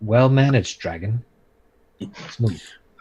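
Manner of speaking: wry, dry tone with a sarcastic edge. Voicing Uriel praising the dragon for breaking the door: possibly sarcastic praise. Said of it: "hope there was no sarcasm in that".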